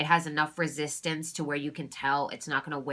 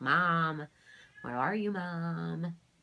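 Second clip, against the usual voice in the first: put-on toddler-style babbling baby talk, drawn out. Describing how she fake-cries and yells, imitating baby talk. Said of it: "and baby talk like".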